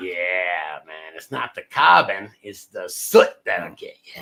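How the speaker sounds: put-on New York accent with a drawn-out "yeah". Chatting with others, doing one's best New York accent. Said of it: "It's my best New York accent".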